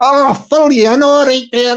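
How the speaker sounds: put-on a bit of Scottish accent. Acting a scene, answering someone who asked to be filled in: slight Scottish accent. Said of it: "that was a bit of a Scottish accent".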